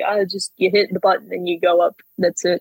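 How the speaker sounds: normal talking voice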